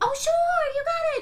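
high, chirpy put-on voice.

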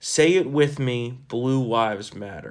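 plain

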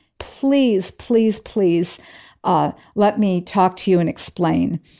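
mock pleading voice, almost crying. Retelling how a man begged through the door, imitating a pleading, almost crying voice. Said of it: "in a pleading, almost a crying voice".

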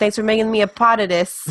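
exaggerated New York accent, part said as pot. Speaker imitates what a man said earlier, exaggerated New York accent. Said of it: "faithful New York accent".

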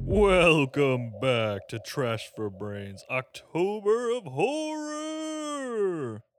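loud, eerie horror-host voice, drawn out. Opening the Trash for Brains October of Horror episode: spooky voice. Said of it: "That was my spookiest voice".

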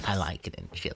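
tiny, very quiet, soft voice. Imitating President Bush visiting Chile: small-voiced President Bush impression. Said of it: "a very small man with a very small voice".

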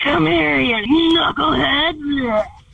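put-on zombie voice, small sound at end. Performing a requested line in a phone audition: zombie voice. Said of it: "Give me your best zombie".

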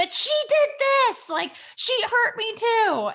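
put-on very high, angry little kid complaining. A mother retelling her son's complaint about his sister: imitating an angry child. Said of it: "And then he's mad because he's like".

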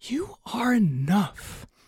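hushed, soft, quiet half-whisper. Describing Kirby looking at himself in the mirror: quiet half-whisper as Kirby. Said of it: "quietly whispering".

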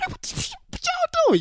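shrill, very high-pitched, upset yapping outburst. Recounting his own outburst at his big brother, retelling his own upset yapping. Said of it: "I'm yapping. I'm going crazy".

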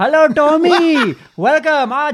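put-on Indian accent, very high and very slow. Imitating a radio presenter's greeting: Indian accent. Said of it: "Heard you do an Indian accent".

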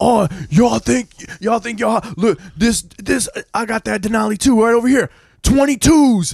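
mock male screaming. Retelling a grown man running up on a group of children, retelling a man screaming. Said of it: "like screaming at us".

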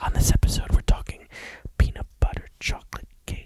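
put-on ASMR whisper. Showing how asmr should sound: put-on asmr whisper. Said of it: "that's how you do A S M R".

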